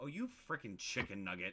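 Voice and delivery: swooping, scornful, contemptuous tone. Showing how tone alone turns harmless words into an insult: insulting tone. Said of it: "with the right tone and go".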